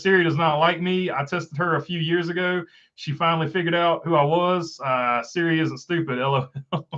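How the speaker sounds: usual speaking voice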